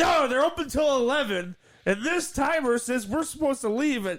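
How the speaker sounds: put-on worked-up, heated, insistent voice, high-pitched. Retelling arguing with brothers over closing time: imitating own screaming. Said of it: "I'm screaming at my brothers".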